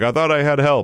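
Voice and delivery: put-on angry tone. Imitating a beaten cornerback blaming teammates: imitating an angry player. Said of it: "he immediately starts getting mad at people".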